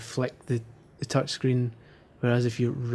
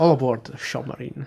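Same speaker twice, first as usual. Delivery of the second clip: put-on Scottish actor voice, louder; 5 dB louder than usual. Joking about a submarine game mode: Sean Connery accent. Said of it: "my best Sean Connery accent".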